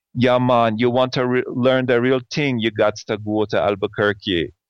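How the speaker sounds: butchered, rough attempt at a Jamaican accent. Retelling what a teacher said, imitating a jamaican accent. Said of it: "I'm gonna butcher his accent".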